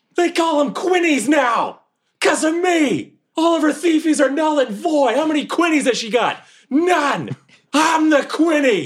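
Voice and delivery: screaming in fury. Voicing a character climbing onto a bridge in anger: screaming at the sky. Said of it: "I'm just screaming at the sky".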